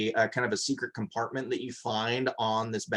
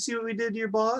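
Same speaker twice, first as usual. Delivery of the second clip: put-on yelling voice, higher pitched; 12 semitones higher than usual. Voicing a player character yelling to intimidate a statue: Ozzy's voice yelling at a statue. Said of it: "But in Ozzy's voice".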